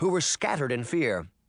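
plain reading voice

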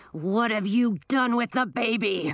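growling dragon voice. Narrator reads the dragon after knocking the old wizard flat: growling Audun dragon voice. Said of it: "The dragon growled".

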